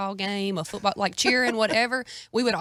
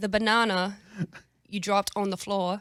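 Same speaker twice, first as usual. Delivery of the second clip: attempted, put-on British accent. Saying a line about a dropped banana in an attempted British accent. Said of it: "can you do a British accent".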